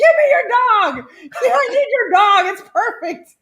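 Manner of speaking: put-on shrill shrieking, pitched way up high. Recounting yelling at a passing neighbor from on top of a truck: retelling her own scream. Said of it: "and I'm screaming".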